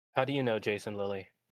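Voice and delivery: whispering. Leaning in close to a character pinned against a wall, whispering. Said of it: "And I'm going to whisper".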